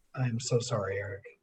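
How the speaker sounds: very light, soft half-whisper under the breath. Acting out a character's words before an incantation: half-whispering very lightly under breath. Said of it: "whisper very lightly under my breath".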